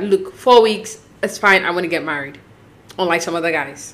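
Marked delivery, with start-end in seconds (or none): none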